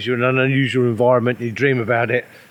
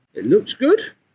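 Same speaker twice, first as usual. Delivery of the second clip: squeaky, little, high-pitched piping voice; 12 semitones higher than usual. Tasting soaked freeze-dried food outdoors: high-pitched squeaky voice. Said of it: "he said in a high-pitched, squeaky voice".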